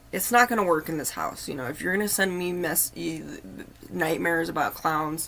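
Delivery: normal talking voice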